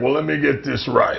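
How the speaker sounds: rough, creaky, raspy wrestler voice. Showing how Kev always starts his stories: Kevin Nash impression. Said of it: "He always starts his stories like".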